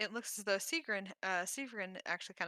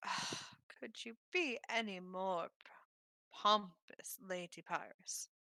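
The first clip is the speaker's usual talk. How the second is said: slow, sneering drawl, down the nose. Game narrator voicing Skiren's retort to Lady Pyrus: Skiren sneering. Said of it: "sneers down his nose".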